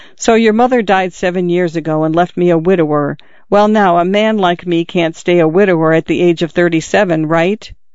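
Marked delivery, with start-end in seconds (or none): none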